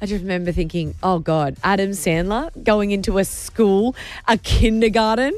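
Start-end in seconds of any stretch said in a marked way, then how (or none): none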